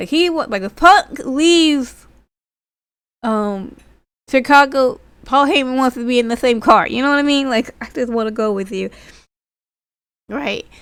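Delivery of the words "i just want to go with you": mock pleading voice. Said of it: "just pleading and begging".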